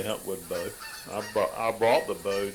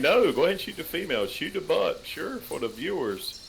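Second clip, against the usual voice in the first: high, fast mock sarcasm. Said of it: "you're being sarcastic".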